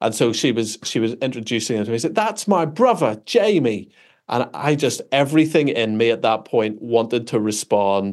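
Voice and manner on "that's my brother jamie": bad, thick, overdone put-on Cockney accent, pitched up. Retelling how a woman introduced her brother to the speaker, bad thick Cockney accent. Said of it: "thick sort of British Cockney accent".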